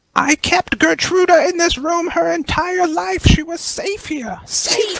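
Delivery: tearful, very high-pitched sobbing outcry. Acting out a crying woman locking eyes with you, retelling a crying yell. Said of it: "she yells out".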